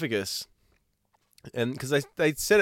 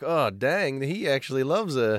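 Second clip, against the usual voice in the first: usual speaking voice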